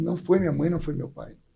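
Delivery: mock choked-up, tearful voice, words catching in throat. Retelling his wife's reply to his shouting: imitating a choked-up voice. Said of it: "com a voz embargada, engasgou".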